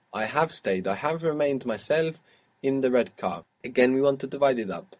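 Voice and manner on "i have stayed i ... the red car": usual speaking voice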